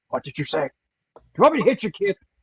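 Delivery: mock furious, angry, combative, fight-picking tone. Acting out Mars picking a fight: angry Mars voice. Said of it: "Why you gotta be so angry?".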